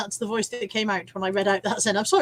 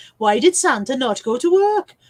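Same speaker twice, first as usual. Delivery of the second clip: put-on Welsh accent with raised pitch; 3 semitones higher, 7 dB louder than usual. Telling the Santa joke again, this time in a Welsh accent. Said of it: "That was a Welsh accent".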